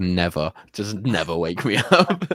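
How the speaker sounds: acted mutter under breath. Retelling what was probably said back then: imitating muttering under breath. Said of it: "under my breath".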